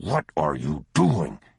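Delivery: hissing the words out. Narrator reading a father's words as he seizes his son's arm, hissed. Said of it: "he hissed".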